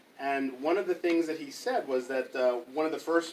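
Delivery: ordinary delivery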